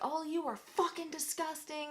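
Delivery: mock enraged, very high, furious screaming. Retelling yelling at someone on the street, retelling a scream. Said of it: "like screaming".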